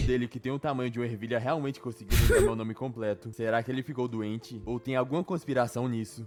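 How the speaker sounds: ordinary talk, nothing marked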